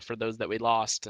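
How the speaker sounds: normal talking voice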